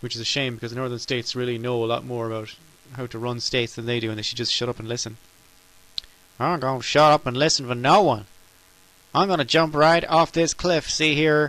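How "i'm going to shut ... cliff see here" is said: terrible put-on southern US accent. Mocking people from the southern states: terrible southern accent. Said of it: "That's a terrible accent".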